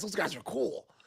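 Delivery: whispery, breathy, hushed put-on voice. Imitating how Tate reacted to other guys at parties: imitating Tate. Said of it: "you take that voice. You don't even talk like that".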